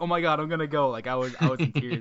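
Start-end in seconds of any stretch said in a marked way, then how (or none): 0.0-0.9 put-on freak-out, higher and louder. Speaker retelling when someone offered to help with an art campaign, reenacting freaking out. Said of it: "I'm freaking out".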